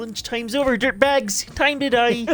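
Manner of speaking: deliberately silly voice. At the table, the speaker volunteers to voice a line in a really stupid voice. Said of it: "let me do a really stupid voice".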